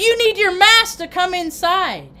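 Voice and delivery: play-acted, worked-up, agitated, insistent voice. Recounting a package pickup, retelling the employee yelling. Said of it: "she's like yelling because her adrenaline's going".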